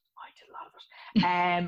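slow whisper on the side. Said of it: "we did a lot of it".

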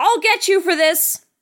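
unconvincing, no-effort shout. Retelling a movie scene where a character shouts into the wilderness: imitating Johnny Depp's half-hearted shout. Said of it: "Johnny Depp just is not fucking trying".

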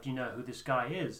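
ordinary talk

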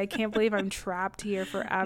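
plain

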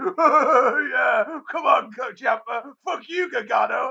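acted, slow, high laughing jeer with long drawn-out oh. Recounting a guy in the crowd shown on tv: retelling laughing jeers. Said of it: "pitching himself laughing".

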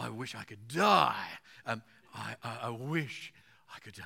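shifted emphasis.

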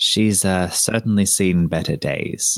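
low mutter under the breath, half to himself. Voicing a character rubbing a crusted wall: muttering under his breath. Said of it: "say under his breath".

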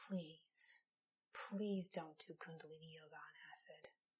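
grave, very quiet, hushed, low, dead-serious voice. Retelling a professor's warning to students: imitating professor, quiet and serious. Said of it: "her eyes got really big and she got really serious".

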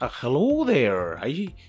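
attempted Scottish accent. Speaker asked to do an accent on cue, attempted Scottish accent. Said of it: "no, Scottish".

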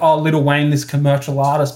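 normal talking voice

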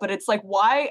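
ordinary delivery

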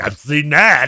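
loud, boastful, show-off bragging tone. Teasing the other speaker by repeating their words: imitating someone bragging. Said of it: "just, like, bragging".

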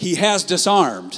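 very loud, high-pitched, fervent and emphatic passionate delivery. Repeating his phrase a second time, with a little passion. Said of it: "I'm going to say it with a little passion".

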